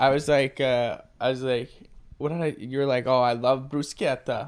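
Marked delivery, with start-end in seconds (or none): 3.1-4.5 mock Italian-style pronunciation. Imitating a friend who says food words the Italian way: imitating a friend's Italian pronunciation. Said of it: "when I first noticed you did it".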